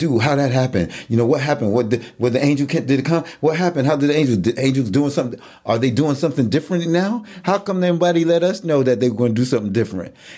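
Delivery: fast, high astonished voice.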